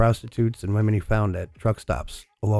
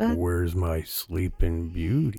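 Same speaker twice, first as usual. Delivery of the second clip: sinister, unsettling, creepy man's radio voice; 4 semitones lower, 5 dB quieter than usual. Retelling a man's clip over a cb radio, the speaker imitates his creepy man's voice. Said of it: "He just sounds so creepy".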